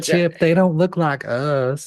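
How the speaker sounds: high-pitched cartoon squirrel voice. Riffing in a bit, speaking to Chip in a Sandy Cheeks voice. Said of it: "You are now Sandy Cheeks the squirrel".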